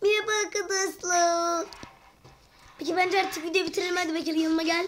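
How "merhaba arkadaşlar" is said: put-on babyish, childlike baby-talk voice. Showing video viewers they can do a baby voice, greeting them in baby voice. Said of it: "biz bebek sesi çıkartabiliyoruz".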